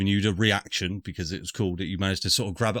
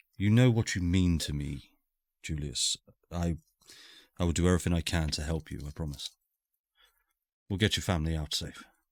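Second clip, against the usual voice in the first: hushed, held-down delivery; 3 semitones lower, 3 dB quieter than usual. Voicing Henri speaking to Julius: hushed tone. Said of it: "he will say it in sort of a hushed, hushed tone".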